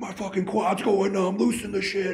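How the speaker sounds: very high, abusive yelling. Retelling complaints while she tightens the gear: imitating own past yelling. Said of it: "and I'm yelling at her".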